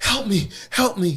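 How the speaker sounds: high-pitched, desperate, pleading cry. Retelling a panic attack in the emergency room: retelling crying out for help. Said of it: "I'm crying out".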